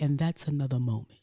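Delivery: dramatic tv detective voice, delivered like a closing line. Mocking how a TV detective talks: Horatio Kane impression. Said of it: "he'd be like".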